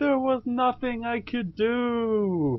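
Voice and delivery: high, slow anguished scream.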